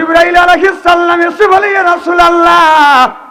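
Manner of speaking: fervent, high, loud calling out.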